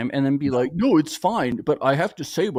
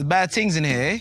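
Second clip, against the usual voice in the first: put-on, imitated London accent; 2 semitones higher than usual. Going over others' accent attempts: imitating Ray's London accent. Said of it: "this is Ray's London".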